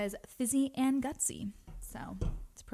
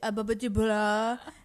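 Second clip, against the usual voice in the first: put-on garbled French, louder; 7 dB louder than usual. Retelling a sitcom scene of a failed French lesson: imitating Joey's garbled French. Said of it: "That episode where Phoebe is trying to teach Joey French".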